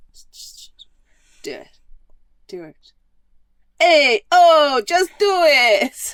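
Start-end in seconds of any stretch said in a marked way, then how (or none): 3.8-6.2 put-on Brooklyn accent, very loud and high. Voicing the woman in the bit, in a brooklyn accent. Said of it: "why she's got a I, Brooklyn accent".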